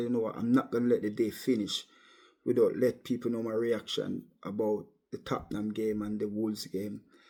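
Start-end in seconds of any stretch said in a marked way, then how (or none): none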